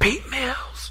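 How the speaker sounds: breathy, hushed whisper. Retelling how he said the name in a whisper: whispered name pete mills. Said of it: "And he said it in a whisper".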